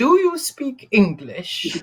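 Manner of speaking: very slow, very loud, swooping pitch. Speaker retelling a film scene, quoting Queen Victoria to Abdul: very slow and loud. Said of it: "says very slowly and very loudly".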